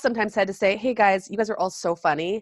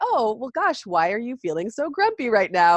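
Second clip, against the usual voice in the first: put-on jokey, joking tone; 3 semitones higher than usual. Retelling how she answered his sarcastic grumpiness, retelling her jokey reply. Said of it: "but in this almost jokey way".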